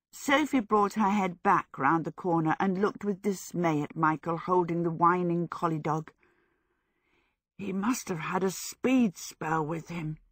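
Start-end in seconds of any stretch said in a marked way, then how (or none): 7.5-10.1 hushed whisper. Michael speaks to Sophie as the collie whines, whispered. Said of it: "Michael whispered".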